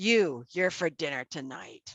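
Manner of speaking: very grumpy, grouchy, cranky voice. Narrating a scene, voicing an unseen speaker answering the question: very grumpy voice. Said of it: "You hear a very grumpy voice say".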